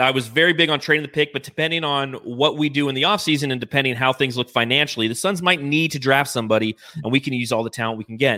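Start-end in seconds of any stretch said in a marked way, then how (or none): none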